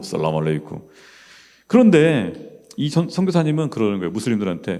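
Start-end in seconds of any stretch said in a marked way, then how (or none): 0.0-0.8 very deep, low, soft and hushed. Describing how Muslims greet each other, saying salam aleikum in a very deep voice. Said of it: "되게 목소리 저음으로".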